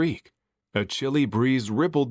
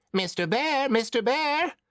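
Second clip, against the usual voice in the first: piercing, very high, screechy witch cry; 12 semitones higher than usual. Narrator reading a story, a voice calls out to the bear: screechy voice. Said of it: "a screechy voice split the air".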